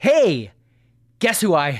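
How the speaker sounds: loud, overly excited, blurted out.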